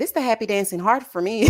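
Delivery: ordinary talk, nothing marked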